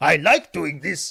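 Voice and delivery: loud, strange foreign accent. Describing how the Muppets all talk, imitating one, Muppets foreign twang. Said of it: "this weird foreign like like twang".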